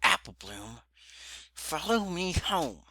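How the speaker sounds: high voice squeezed through gritted teeth. Reading a furious sister's order aloud, through clenched teeth. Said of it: "barely seep out through Applejack's clenched teeth".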